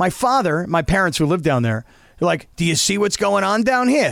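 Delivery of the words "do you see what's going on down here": put-on Italian gangster voice. Retelling what his father said to him, imitating him as an Italian gangster. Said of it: "you made your father sound like an Italian gangster".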